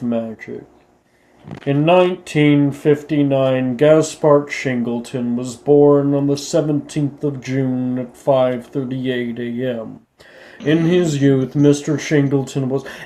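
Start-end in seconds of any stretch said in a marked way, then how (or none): 1.7-12.9 imitated droning monotone lecturing voice. Imitating a teacher who starts class with no introduction, droning monotone teacher voice. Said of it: "his his uh, monotone voice is so so difficult to listen to".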